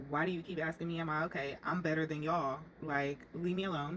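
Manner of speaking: plain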